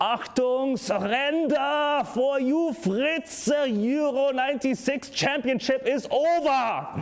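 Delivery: put-on heavy German accent, very high, slow. Reading a text aloud the German way, put-on German accent. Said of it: "I will try to pronounce it the German way in which it is meant to be read".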